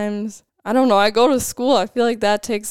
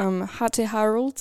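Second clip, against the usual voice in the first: put-on British accent, much quieter; 5 dB quieter than usual. Asked to try saying a guest's name, British accent. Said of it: "People like to say it in a British accent".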